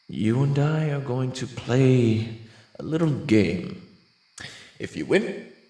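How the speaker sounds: sly, cocky, teasing voice with drawn-out delivery. Reading a story aloud, voicing the ghost stallion's challenge: ghost stallion character voice. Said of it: "The stallion reaches into his suit pocket and pulls out a business card with his name. He holds it out for Twilight to take, who ever so cautiously takes it from his hoof. The name's [name]. Professio".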